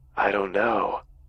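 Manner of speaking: rasping, torn, hoarse, ragged monster voice. Retelling the thing's answer at the bedside: hoarse and ragged voice. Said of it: "in this hoarse and ragged voice".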